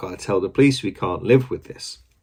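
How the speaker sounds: normal talking voice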